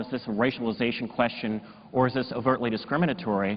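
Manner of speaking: normal talking voice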